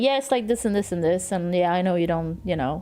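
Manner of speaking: acted-out dismissive tone. Acting out replies to disliked staff: imitating own dismissive tone. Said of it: "Kinda dismissive, I guess".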